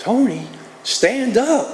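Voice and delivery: put-on very high, sweetest little Southern accent. Quoting a little Southern girl who sat in front of him, sweetest Southern accent. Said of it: "the sweetest Southern accent".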